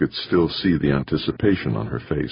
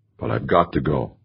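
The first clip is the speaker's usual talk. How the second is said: ordinary delivery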